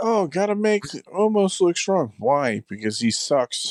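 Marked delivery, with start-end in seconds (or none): 0.0-2.1 high-pitched mocking voice, pitched way up. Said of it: "they were like".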